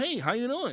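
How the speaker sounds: high-pitched cartoon frog puppet voice. Mimicking a man who popped up on a show, Kermit the Frog voice. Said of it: "you really sound like Kermit".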